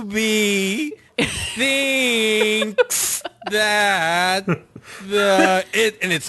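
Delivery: painfully drawn-out, very slow, very high drawl. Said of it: "Hit the two times speed button on your player".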